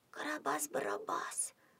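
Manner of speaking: hushed, breathy whisper, barely voiced. A character spots a bearded man hiding his face, whispered. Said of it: "прошептала Алена".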